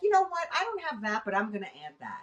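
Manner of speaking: ordinary talk, nothing marked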